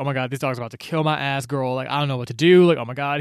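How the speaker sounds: put-on panicking voice. Retelling a book scene where a boy is trapped by dogs: imitating panicking character. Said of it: "obviously panicking, like, freaking the fuck out".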